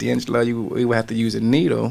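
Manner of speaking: normal talking voice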